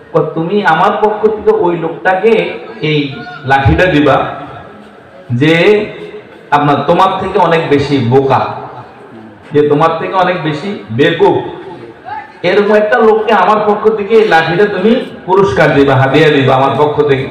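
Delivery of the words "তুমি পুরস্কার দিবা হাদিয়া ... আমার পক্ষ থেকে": ordinary talk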